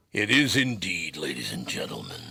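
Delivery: low, rough, gruff rumbling voice. Host introducing the podcast to listeners in a gruff, rumbly voice. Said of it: "my gruff, rumbly voice".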